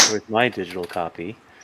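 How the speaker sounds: velvety, silky-smooth voice. Imagining Clayton complaining about a missing digital copy: Clayton's silky voice. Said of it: "with his silky voice saying".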